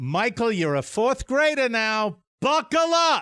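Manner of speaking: put-on New England accent, pitched very high. Retelling what a fourth grade teacher said to a child: imitating a teacher's new england accent. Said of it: "she had a New England accent".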